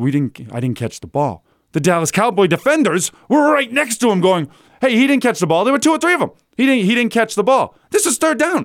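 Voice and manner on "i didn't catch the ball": put-on quiet muttering, much lower and slower. Acting out a player's words to his teammate, imitating someone speaking quietly. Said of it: "he's quietly saying".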